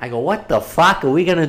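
put-on Boston accent. Retelling talking with a friend's girlfriend, the speaker quotes himself in a Boston accent. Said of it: "we were talking a Boston accent".

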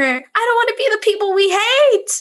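very high shrieked scream. Retelling running out without a mask and screaming at a friend: imitating own past scream. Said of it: "I screamed at her".

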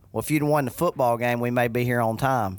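ordinary talk, nothing marked

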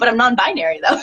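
normal talking voice

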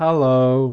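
level, toneless, flat monotone delivery. Retelling a story where a goldfish answers, monotone hello. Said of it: "in a monotone voice, kind of like that".

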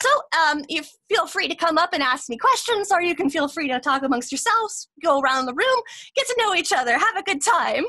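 eager, cheerful, excited, high sing-song voice. Game master voices a newer teacher inviting the class to mingle, excited. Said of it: "You see her kind of walk in just kind of excitedly. She's one of those newer teachers".

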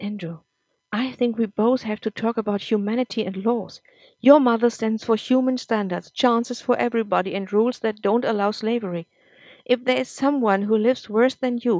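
plain reading voice

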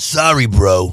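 tossed-off, offhand bro character voice. Doing a two-word impression from Entourage: Johnny Drama impression. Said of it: "I will do Johnny Drama from Entourage".

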